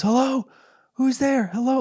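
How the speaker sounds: muffled yell, calling out very high pitched. Retelling how a man yelled with the phone held against his chest: retelling a muffled yell. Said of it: "his muffled voice yelling out".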